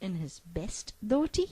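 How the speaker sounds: ordinary delivery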